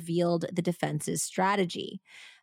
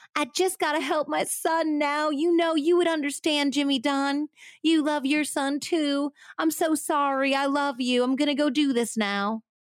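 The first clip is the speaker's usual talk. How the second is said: big, showy, theatrical fake weeping, pitched up; 8 semitones higher than usual. Retelling a witness's testimony in court, imitating fake crying. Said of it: "made a big show of fake crying".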